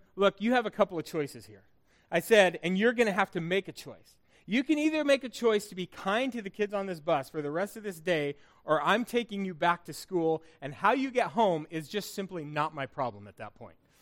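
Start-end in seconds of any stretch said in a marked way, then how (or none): none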